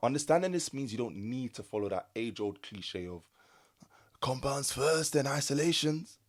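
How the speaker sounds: put-on, slow, high-pitched old man voice. Speaker explaining to listeners, trying out an old man accent. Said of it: "I thought I was trying to do an old man accent".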